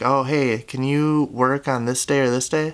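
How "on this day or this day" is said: normal talking voice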